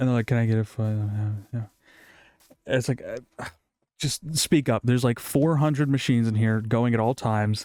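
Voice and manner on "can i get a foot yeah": quiet, hushed stage whisper under the breath. Retelling customers ordering sandwiches, imitating someone half-whispering. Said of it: "whisper to me, like".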